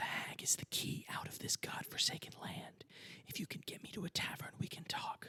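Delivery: hushed, soft, breathy whisper, close to the ear. Game narrator voicing a cat perched on a character's shoulder, whispering. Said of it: "she is going to whisper".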